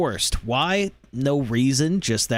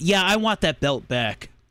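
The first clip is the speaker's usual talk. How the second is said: put-on childish voice, higher pitched; 3 semitones higher than usual. Retelling a film scene where Peter asks for the belt back: imitating Peter's baby mode. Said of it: "typical, uh, baby mode".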